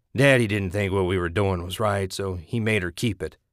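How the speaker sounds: ordinary delivery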